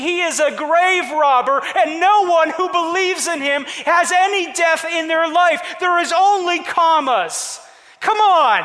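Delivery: loud, excited preacher style.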